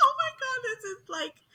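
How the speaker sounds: mock sobbing in a very high kid voice.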